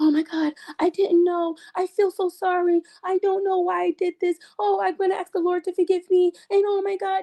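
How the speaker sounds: drawn-out, slow, very high, fake remorseful voice. Imitating people who will apologize once she is outed: mocking imitation of fake remorse. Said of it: "they're gonna be like".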